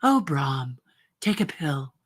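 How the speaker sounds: low character voice with wide, swooping tune. Voice actor demonstrating a role from the show Lost on Earth: Angela's voice. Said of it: "did uh, Angela's voice".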